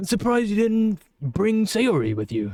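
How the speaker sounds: put-on British accent. Voicing a character in a performed scene, in a British accent. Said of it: "are you cool with this uh, British accent? I've given it to you the whole time".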